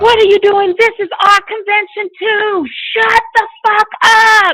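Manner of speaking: mock furious screaming, very high-pitched shriek. Retelling people at a convention screaming at the group, retelling angry screaming. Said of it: "They were screaming in our ears".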